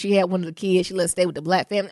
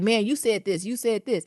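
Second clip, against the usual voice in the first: plain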